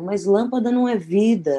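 put-on, called-out shout. Retelling a complaint story, acting out another person's reply as a shout. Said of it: "E a Sueli grita".

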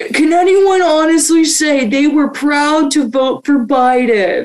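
loud heckling call. Telling a story, the speaker quotes a guy's question: retelling a guy yelling. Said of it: "This guy was yelling".

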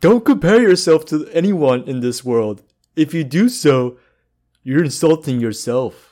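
put-on cartoon character voice. Giving advice to not compare yourself to anyone, in a Patrick voice. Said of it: "that was my best Patrick".

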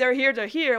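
put-on, loud, thrilled, excited screaming. Retelling an episode scene where a character runs to the door: imitating an excited scream. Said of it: "He's screaming".

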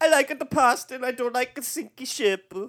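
over-the-top fake Italian accent, very high pitched. Act out a guy in a film whose portrayal you call not PC, with a put-on Italian accent. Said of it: "throw on an Italian accent".

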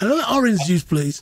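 put-on Brummie Birmingham accent. Recalling boys ordering in a first class lounge, in a Brummie accent. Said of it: "in your best Brummie accent".

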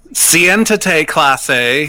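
put-on Spanish read with flat, no-effort American accent. Imitating Spanish teachers who don't try the accent: flat American accent in Spanish. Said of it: "Spanish teachers wouldn't even try with the accent".

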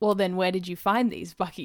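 ordinary delivery, nothing marked

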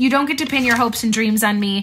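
ordinary delivery

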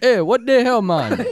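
very high, very loud put-on Jamaican accent. Joking about accents, speaker repeats the same line in a Jamaican accent. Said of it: "That's my Jamaican, guys".

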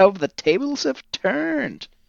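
high, slow, mock gloating villain voice.

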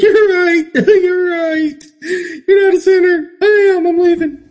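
very high, blubbering fake crying, sounding like giving in. Speaker imagines being yelled at through a bullhorn on a street corner, mock crying. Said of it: "I'd start crying and be like".

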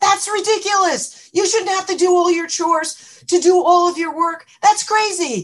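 very high, shrill, loud yell. Retelling how she interrupted a little kid, retelling a yell. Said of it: "starts yelling".

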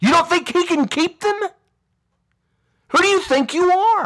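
very high-pitched, irritated, annoyed tone. Speaker rebuking attitudes seen in the churches, upset and annoyed. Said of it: "I'm upset and I'm annoyed".

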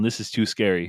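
plain

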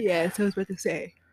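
talking through a yawn. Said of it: "you yawning, man".

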